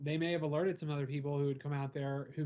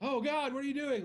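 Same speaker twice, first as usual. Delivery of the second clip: put-on very high, loud exclamation; 11 semitones higher than usual. Speaker acting out how someone reacted on catching them, retelling a loud exclamation. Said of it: "Like kind of loud".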